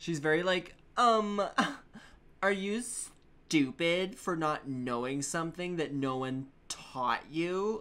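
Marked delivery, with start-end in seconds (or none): 1.0-7.8 put-on snide, condescending, talking-down mean-girl voice. Voicing the character Tetra as a mean girl, Tetra mean-girl voice. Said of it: "I choose to voice her as a mean girl".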